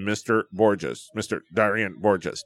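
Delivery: low-pitched, robotic, automated computer voice. Imitating an automated phone call reading out a name, in computer voice. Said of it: "then computer voice".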